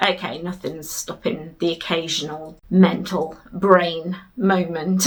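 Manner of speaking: ordinary talk, nothing marked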